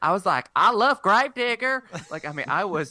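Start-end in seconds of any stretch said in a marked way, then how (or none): 0.6-1.8 put-on very high, loud kid voice, thick Southern accent. Retelling a childhood love of monster trucks: imitating own childhood southern accent. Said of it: "I was very, very Southern".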